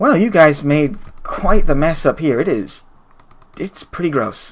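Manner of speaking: very relaxed, laid-back, unbothered, easygoing voice. Voicing a well-dressed bookish stranger greeting the party: very relaxed voice. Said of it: "a very relaxed voice".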